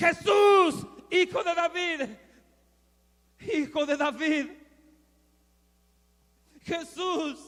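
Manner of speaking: loud, high clamoring cry. A speaker retelling a Bible story acts out a man calling to Jesus: retelling a shout. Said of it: "Él daba voces, Él gritaba".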